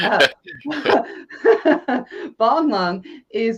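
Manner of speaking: high, loud laughing speech, slowed down.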